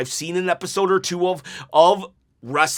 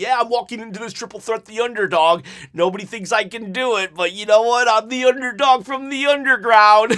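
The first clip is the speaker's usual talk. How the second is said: mock smug, condescending, gloating, talking-down tone, pitched up; 5 semitones higher than usual. Imagining what Sami Zayn should say: imitating condescending heel Sami Zayn. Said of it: "he's doing it in his heel, condescending kind of way".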